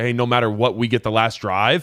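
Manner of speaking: ordinary talk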